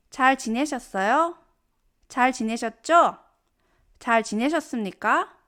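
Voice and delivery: ordinary talk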